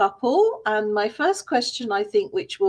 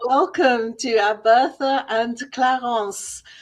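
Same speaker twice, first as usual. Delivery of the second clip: speaking English with a French accent. A host welcomes guests who accepted an invitation, in a French accent. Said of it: "I've got it with a French accent".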